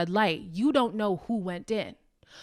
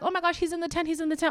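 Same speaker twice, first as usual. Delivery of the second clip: put-on frantic, spiralling alarm, high and rattled off; 8 semitones higher, 3 dB quieter than usual. Retelling a contestant spiraling in panic: imitating someone panicking. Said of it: "she's having this spiral".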